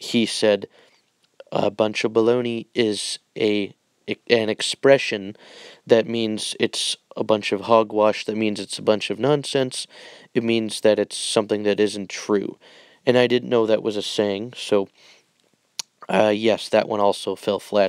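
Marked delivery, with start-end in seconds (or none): none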